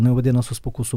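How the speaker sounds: ordinary talk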